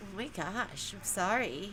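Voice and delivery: play-acted, very slow, drawn-out, condescending and sarcastic. Mimicking how someone said sorry to show it was a mock-sarcastic apology. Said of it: "You sound sarcastic and condescending right now".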